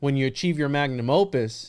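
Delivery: ordinary talk, nothing marked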